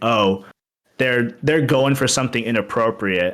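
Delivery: normal talking voice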